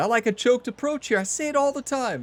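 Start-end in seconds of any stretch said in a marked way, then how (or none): 0.0-1.2 higher-pitched, self-mocking delivery. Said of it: "now every time I say it, I think about it".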